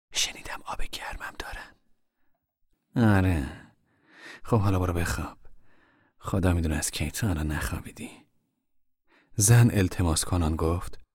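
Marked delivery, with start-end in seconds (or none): 0.1-8.1 whispering, much quieter. A mother answers Tom, whispering in his ear. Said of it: "مادر در گوشی گفت".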